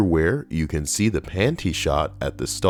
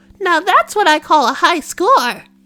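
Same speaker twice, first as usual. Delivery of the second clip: put-on squeaky diva voice; 8 dB louder than usual. Retelling a line blurted out toward the camera, in a squeaky diva voice. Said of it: "in the squeaky diva voice".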